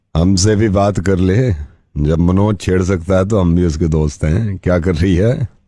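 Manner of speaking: lecherous, leering voice.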